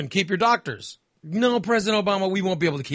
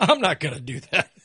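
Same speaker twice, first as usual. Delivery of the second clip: put-on amused laughter while speaking; 3 semitones lower than usual. Acting out what he said walking off stage, retelling it laughing. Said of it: "walked off the stage laughing".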